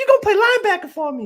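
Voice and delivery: really high-pitched voice. Retelling football practice, the speaker imitates his linebacker coach's really high voice. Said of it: "He got a really high voice".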